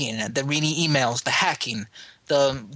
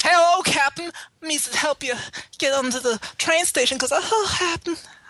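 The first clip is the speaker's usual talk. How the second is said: clumsy, very high, bad game-character voice; 13 semitones higher than usual. Imitating a game's voice acting, badly: bad imitation of a game character. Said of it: "It was really bad".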